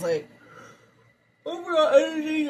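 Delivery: high, loud words distorted by a yawn. Reading tarot cards for viewers, yawning while talking. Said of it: "I'm sorry, I was yawning".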